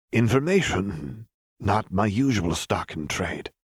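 muttered half to self, grudging. A man turns to face her, muttering. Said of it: "the man muttered".

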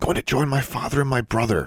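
whispering. Leaving the graveyard ghosts, a young witch answers Absalom Thorn in a whisper. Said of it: "she whispered".

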